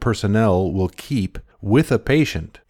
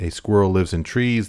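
ordinary talk

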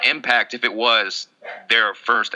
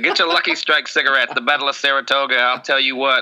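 put-on old-time 1920s baseball announcer voice; 3 semitones higher than usual. A history teacher, bantering with the others, uses a 1920s baseball announcer voice. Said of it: "talk like a 1920s baseball announcer".

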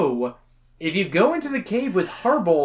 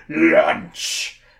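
gleeful, roaring monster ogre yell; 12 semitones lower, 4 dB louder than usual. Narrator voicing the giant ogre in the story, ogre yelling. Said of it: "The beast yells".

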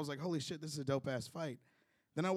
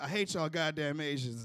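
plain

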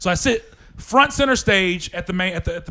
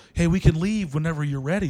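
put-on voice, speaking very softly. Retelling what she said after leaning in: imitating someone speaking very softly. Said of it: "she leans in and very softly goes".

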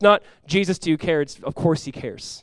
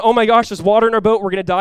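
mock exaggerated, alarmed, frantic freaking-out panic; 5 semitones higher, 8 dB louder than usual. Retelling the disciples in the boat freaking out: imitating people freaking out. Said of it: "when everyone's freaking out".

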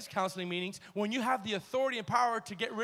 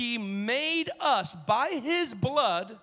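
slow, deliberate reading with each word landing. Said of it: "I want you to read that slow".

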